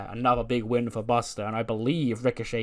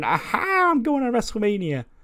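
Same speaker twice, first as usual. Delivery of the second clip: mock celebration, high swooping gloating laugh; 11 semitones higher, 6 dB louder than usual. Retelling a wrestler celebrating a win: imitating Ricochet laughing. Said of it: "the Ricochet laugh hurt my throat".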